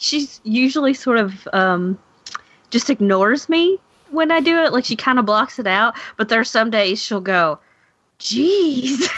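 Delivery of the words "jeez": high, long, stretched-out jeez. Retelling what Cindy says about the cursing: imitating Cindy saying jeez. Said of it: "That was a really good impression of Cindy".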